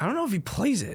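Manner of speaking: high voice cracking mid-sentence. Wondering aloud whether another person plays a game, voice cracking. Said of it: "That was a terrible voice crack".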